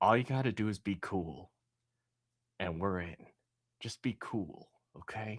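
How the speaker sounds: quiet half-whispered aside. Recounting how a man reaching the guy in the suit tells everyone; half-whispering. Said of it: "he he whispers to everyone".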